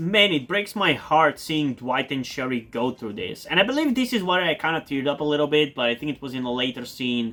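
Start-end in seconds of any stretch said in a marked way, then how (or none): none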